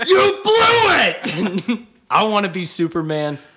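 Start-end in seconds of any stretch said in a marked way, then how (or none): 0.1-1.8 high, slow, drawn-out bellowing yell. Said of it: "He General Zod".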